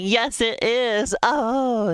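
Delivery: put-on very slow, drawn-out, giddy overexcited yell, high. Quoting a man unreasonably excited over a trailer: imitating an overexcited shout. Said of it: "I just have him going".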